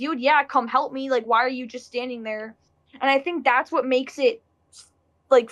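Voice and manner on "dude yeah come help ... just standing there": ordinary talk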